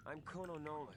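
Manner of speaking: ordinary delivery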